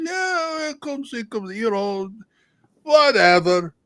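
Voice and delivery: put-on Russian accent, pitched very high. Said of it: "very me easy to do Russian accent".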